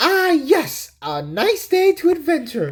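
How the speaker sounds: very high, swooping, drawn-out, stretched voice. Reading a mini comic aloud, voicing the character: classic Sonic voice. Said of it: "that's my classic Sonic voice".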